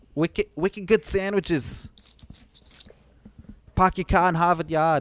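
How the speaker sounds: put-on Boston accent. Trying out Boston phrases with the other speaker, Boston accent. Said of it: "Are you from Boston?".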